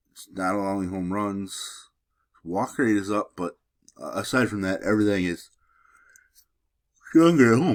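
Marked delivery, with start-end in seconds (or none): 4.8-7.7 loud words said through a yawn. Breaking down a pitcher's home numbers before a Baltimore game, yawning while talking. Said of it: "Sorry, uh, yawning".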